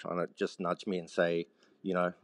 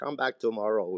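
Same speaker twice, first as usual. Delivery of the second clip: spoken in a put-on Finnish accent; 4 semitones higher than usual. Speaker recalls asking for a job, imitating Pussy's Finnish accent. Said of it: "with that the Finnish accent".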